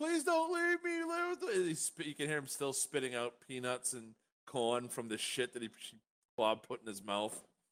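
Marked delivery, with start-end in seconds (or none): 0.0-1.5 shrill, very high, panicked scream. Voicing a tied-up clerk who screams at the party: clerk screaming in panic. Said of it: "the clerk in here screaming".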